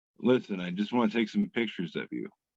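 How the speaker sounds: creepy, deep voice. Describing a posted picture, voicing China as Jeffrey Dahmer: creepy Jeffrey Dahmer voice. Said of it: "your voice went so good with it".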